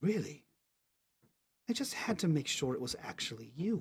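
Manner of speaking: close, hushed whisper, right at the ear. Voicing a character who speaks right behind a player's shoulder: whispering in your ear. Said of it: "as he was whispering in your ear".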